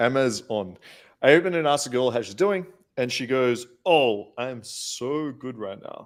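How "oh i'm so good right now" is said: very slow, drawn-out, acted sarcastic drawl. Reading out a question about a girl's reply: imitating a sarcastic reply. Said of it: "in a sarcastic way".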